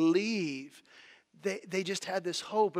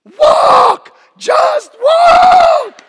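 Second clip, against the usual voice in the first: very high, very loud, shrill frustrated scream; 21 dB louder than usual. Retelling a man at the back of a stuck escalator, screaming in frustration. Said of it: "out of frustration, just screams".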